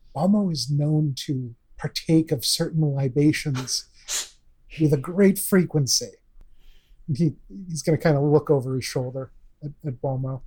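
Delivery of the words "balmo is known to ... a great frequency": slightly lowered, quieter, low tone. Speaking as a character leaning over to someone: lowered voice. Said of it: "I'm gonna lower my voice a little bit".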